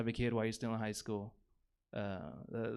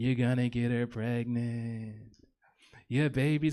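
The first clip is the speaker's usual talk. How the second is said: put-on slow, dopey, dumb-sounding voice; 4 dB louder than usual. Retelling a friend's warning in his head, imitating friend's stupid-ass voice. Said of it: "my friend's stupid-ass voice".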